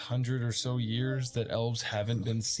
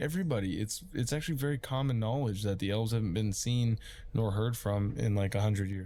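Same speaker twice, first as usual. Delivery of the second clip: ordinary talk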